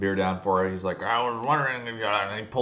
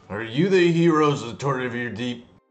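put-on sloppy, slurring, loud, high drunk dwarf voice; 5 semitones higher, 5 dB louder than usual. The game master voices a drunk dwarf walking up to the heroes' table, slurring. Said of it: "One of them kind of slurs".

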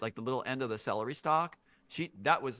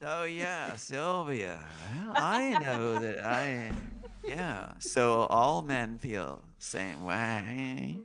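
mock, very slow, try-hard seductive, sultry voice. Imitating how a man talks to women: imitating a man trying to sound sexy.

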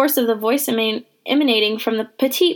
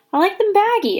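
embarrassed, sheepish, abashed, pitched up; 9 semitones higher than usual. Pudge answers after a girl pulls down his shorts, embarrassed.

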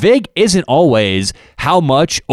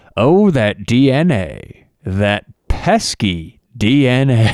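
put-on crime-show narrator voice. Retelling a comedian's impression of a Dateline reporter: Keith Morrison Dateline voice. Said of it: "doing his, uh, Dateline N B C voice".

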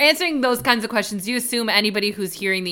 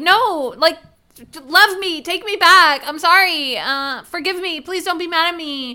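put-on high, frantic, desperate, freaked-out pleading; 8 semitones higher, 4 dB louder than usual. Recounting a woman's reaction as a man moves away from her, retelling her freaking out. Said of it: "freaks out and is like".

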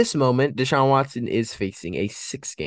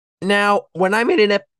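loud, very high voice crack breaking mid-word; 11 semitones higher, 6 dB louder than usual. Talking through the AFC North division; voice cracking. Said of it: "pardon the voice crack right there".

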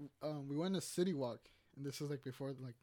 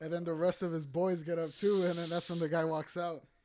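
ordinary delivery

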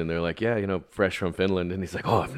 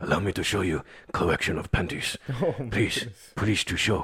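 rough, rasping put-on voice. Speaker acts out a masked man's lines, in his deep, raspy put-on voice. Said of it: "He's got this deep, raspy voice".

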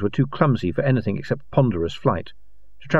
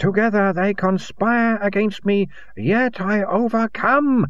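shrieked scream, very high and wild; 9 semitones higher than usual. A man rants to his companion, screaming. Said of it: "he screamed, eyes glazed".

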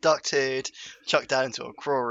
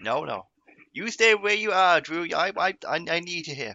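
put-on Cajun accent, much higher pitch; 5 semitones higher than usual. Speaker retells being told to stay put, in a put-on Cajun accent. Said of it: "Are you Cajun now?".

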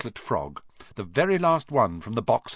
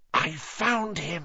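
hushed whisper; 6 semitones higher than usual. Narrator reads a character announcing he found the name, whispering. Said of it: "he whispered".

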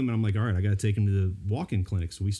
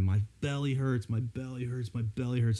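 put-on tearful, crying child's whine; 3 semitones higher, 4 dB quieter than usual. A dad retells his son at football practice, imitating a child crying. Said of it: "he's crying all the time".

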